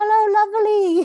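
very high, loud, put-on Brazilian accent. Quoting the photographer's voice notes, imitating a brazilian accent. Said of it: "she's Brazilian, and so she has the most beautiful accent".

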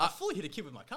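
very loud, high, thrilled, excited, boastful tone. Speaker repeating his car story after being told he sounds excited, mock-excited. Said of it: "The way you said that, just like you're excited".

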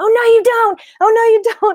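shrill, very high scream. Telling how the speaker screamed at a man running to the car door: retelling a scream. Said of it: "I start screaming at him".

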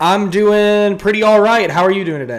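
high, loud shouting. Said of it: "I feel like you're shouting".

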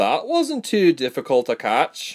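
dry, wry tone. A woman archer remarks as two soldiers fall, wry. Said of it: "she said wryly".

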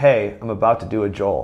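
plain

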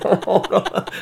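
high, laugh-filled speech, laughing through words. Retelling waking up to an accusation: imitating own laughing reply. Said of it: "And I start laughing".

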